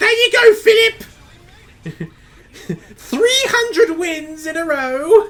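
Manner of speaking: high, loud, shrill, horrible posh voice, drawled slowly. Imagining the Queen talking to Philip, a horrible Her Majesty impression. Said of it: "It's a horrible impression of, of of Her Majesty".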